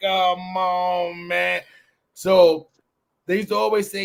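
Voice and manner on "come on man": put-on slurred, drunken whining voice. Imitating a drunk wino talking to people: drunk person whining. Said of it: "it was always whining when you would talk when you was drunk".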